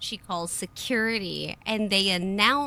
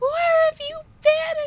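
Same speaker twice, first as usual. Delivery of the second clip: mock very high, loud, frantic, distraught cry; 7 dB louder than usual. Retelling how a crying mother found the speaker: imitating a freaking-out mother. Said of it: "she's freaking out".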